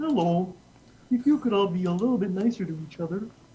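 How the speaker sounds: froggy, earnest puppet voice. Imitating a high school principal being serious: Kermit the Frog voice. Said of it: "exactly like Kermit the Frog".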